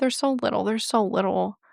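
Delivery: overcome with emotion, straining to stay composed. Reading a missing-persons report aloud, the speaker is getting emotional. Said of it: "I'm getting so emotional".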